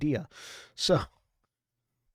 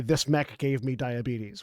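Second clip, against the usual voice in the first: usual speaking voice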